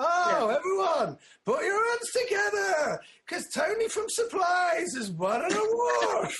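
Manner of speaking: drawn-out sarcastic fanfare voice, very high and slow. Acting out announcing an award nobody cares about, in acted sarcastic tone. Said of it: "being quite sarcastic about it and going like".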